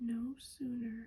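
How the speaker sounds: ordinary delivery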